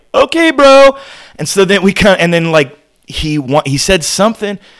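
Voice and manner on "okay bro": shrill, very high, very loud scream. Retelling how the crowd answered a man threatening to stop the show: retelling a scream. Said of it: "And we're screaming".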